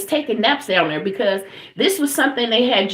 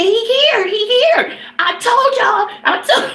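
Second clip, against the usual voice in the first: put-on long, high, drawn-out hollered cries; 10 semitones higher, 3 dB louder than usual. Retelling finding him under the house: imitating own past yelling. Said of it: "And I started yelling".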